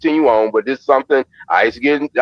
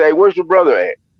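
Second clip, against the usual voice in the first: mock sarcastic tone; 3 semitones higher than usual. Retelling God's question to Cain: imitating a sarcastic question. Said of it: "it's kinda like a sarcasm".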